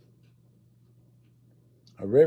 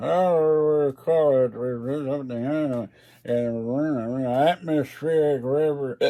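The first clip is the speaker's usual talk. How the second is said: put-on slow, drawn-out drunk voice. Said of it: "some guy gets drunk one night at the Weather Bureau".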